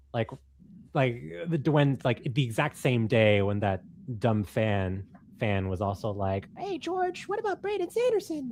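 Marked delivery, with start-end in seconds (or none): 6.5-8.5 very high, shrill calling voice. Retelling what a fan asked George at a book signing: imitating a fan. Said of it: "That was a perfect impression".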